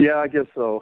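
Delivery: beaten-down, reluctant, defeated and resigned voice. A man asked if he's ready to get her on the phone answers: defeated. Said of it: "you sound so defeated".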